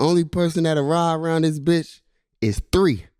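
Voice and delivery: high-pitched, angry, snapping delivery. Retelling how a coach snapped at everybody after a loss: imitating Coach Bobo snapping. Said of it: "he was snapping on everybody".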